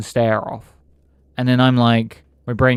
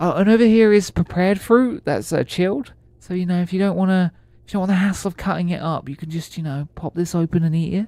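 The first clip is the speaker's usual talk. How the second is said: put-on, least sincere customer-service voice, pitched up; 8 semitones higher than usual. Retelling showing someone around the store, in a put-on least sincere voice. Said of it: "my least um sincere voice".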